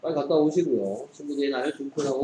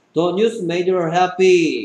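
very slow, loud reading, every word stretched. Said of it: "그 밑에 문장도 그럼 마찬가지겠죠".

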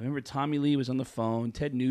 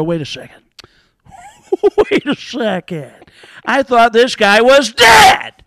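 shrieked, big and swinging; 11 semitones higher, 19 dB louder than usual. Describing a favourite comedian impression, done in a Sam Kinison voice. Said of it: "I just always love that that voice where you go".

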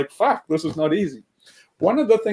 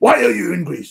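hard, hostile, really harsh and intimidating; 3 semitones higher than usual. Retelling a police officer at the station questioning them, imitating a harsh question. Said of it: "like really harsh".

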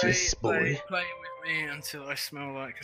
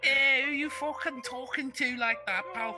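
mock Scouse Liverpool accent; 10 semitones higher than usual. Imitating Liverpool people after naming the Scouse dialect: mock Scouse accent. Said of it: "'cause they talk like that".

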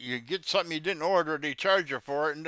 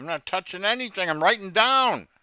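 loud shout that keeps rising throughout; 3 semitones higher, 7 dB louder than usual. Told not to touch the computer, the speaker answers, shouting. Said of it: "Why are you shouting, sir?".

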